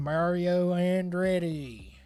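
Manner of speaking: Southern-style American accent. Announcing the name in a put-on NASCAR accent, just because. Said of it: "I had to say it with the NASCAR accent".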